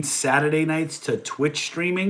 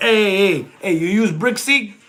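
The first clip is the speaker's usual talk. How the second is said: swaggering Boston accent, pitched up, street slang; 5 semitones higher, 4 dB louder than usual. Speaker talking about using brick seek, in a Northeast Boston accent. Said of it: "the Northeast Boston slang".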